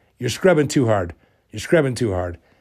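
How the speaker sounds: ordinary talk, nothing marked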